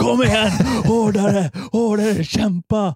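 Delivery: put-on, very high-pitched, driving coach yell. Retelling how a woman stood yelling at the speaker during exercises, imitating someone yelling. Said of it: "Hon står och skriker på mig".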